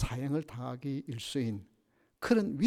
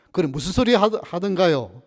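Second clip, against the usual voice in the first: loud, high, curt and blunt. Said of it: "퉁명스럽게 물었습니다".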